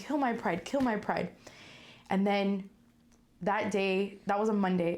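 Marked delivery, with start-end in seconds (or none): 0.0-1.3 put-on crying, tearful pleading voice. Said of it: "crying and I was like".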